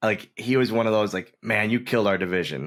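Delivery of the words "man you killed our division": put-on dry, half-earnest sarcastic tone. Retelling a wrestler's remark about the title: imitating a sarcastic but serious remark. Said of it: "in a sarcastic but serious way".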